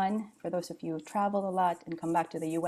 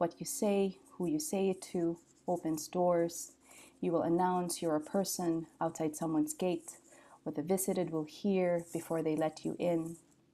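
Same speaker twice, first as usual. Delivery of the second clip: normal talking voice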